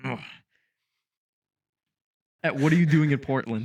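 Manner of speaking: angry, baffled, infuriated, confused grumbling mumble. Retelling how Tito stormed off after a question, imitating Tito's infuriated mumble. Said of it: "infuriated and confused by that question".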